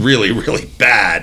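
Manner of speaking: ordinary talk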